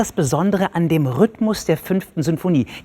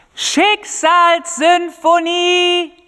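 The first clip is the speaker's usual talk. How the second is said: very high, loud shouted word; 12 semitones higher, 5 dB louder than usual. Answering someone who asked what was said, shouting.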